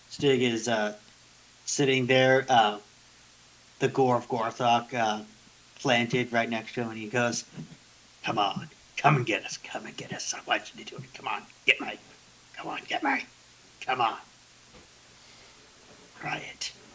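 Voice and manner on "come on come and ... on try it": quiet, private, muttered whisper. A game master voices a character taunting the party; whispering to himself. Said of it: "he's just whispering that to himself".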